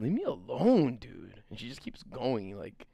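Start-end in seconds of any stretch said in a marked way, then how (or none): 0.0-1.4 slow, drawn-out way of talking. Showing how Mitster talks. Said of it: "This is how Mitster talks".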